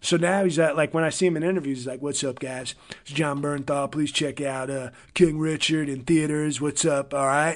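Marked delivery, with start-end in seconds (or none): 2.0-7.1 put-on Southern California voice, quieter. Act out the actor promoting his film in interviews, in Jon Bernthal's Southern California voice. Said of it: "he's got like a real Southern California".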